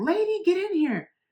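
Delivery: very high, loud, urgent scream. Retelling a man screaming for the office manager to come in; retelling a scream. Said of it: "He screams for her name".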